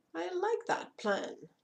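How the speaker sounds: happy dragon voice, pitched way up. Narrator reading a dragon's reply in a story, cheerful dragon voice. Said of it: "The dragon's voice was much more cheerful".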